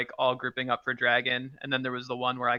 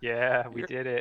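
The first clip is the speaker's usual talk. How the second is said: sounding defeated and dejected. Answering congratulations on a first win: sounding defeated. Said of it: "you sound defeated".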